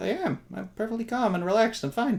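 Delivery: overly nervous, on edge, as if the world's ending. Insisting in character that all is calm after being told to relax: overly nervous. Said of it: "you just sound overly nervous".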